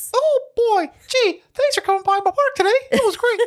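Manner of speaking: squeaky voice, pitched way up high. Retelling how Kris talked to Mickey Mouse in the park, Mickey Mouse voice. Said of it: "talk to Mickey Mouse like Mickey Mouse".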